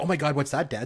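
ordinary delivery

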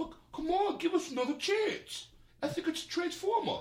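very high pleading tone, deliberately badly done. Retelling a movie scene, imitating the lead's plea: worst Marky Mark impression. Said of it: "That is the worst impression".

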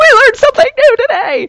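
mock, very high, fast, thrilled excited outburst. Retelling learning a new bird fact: imitating own past excitement. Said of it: "I was excited 'cause she was excited".

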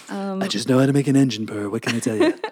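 put-on sly old tycoon voice. Voicing the mechanic from a listener's question, in a Mr. Burns voice. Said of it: "he sounds like Mr. Burns".

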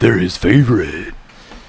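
scary, unsettling, terrifying made-up voice. Teasing another speaker about liking aliens: terrifying voice. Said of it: "That is such a terrifying voice".

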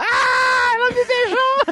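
play-acted very high outcry, dragged out slowly. Recalling the episode where Lúcia kissed Shredder: imitating Shredder shouting. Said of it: "ele começou a gritar".

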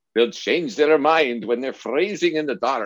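put-on speaking with a Scottish accent. Recalling your thermodynamics professor's reply in engineering school, in Professor Saravanamuto's Scottish accent. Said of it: "he would say with his scottish accent".

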